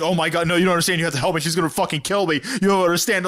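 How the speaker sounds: mock frantic, fast, panicked pleading. Recapping a show character begging for help, imitating panicked pleading. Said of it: "when he's like panicking about like".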